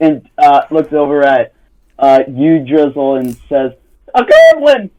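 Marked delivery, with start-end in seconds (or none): 4.1-4.8 nervous, startled cry, higher and louder. Voicing a skittish character spotting someone: skittish, startled cry. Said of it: "she looks, like, real skittish".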